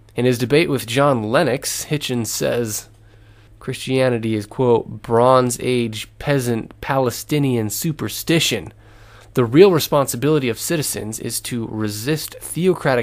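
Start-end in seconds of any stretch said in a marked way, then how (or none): none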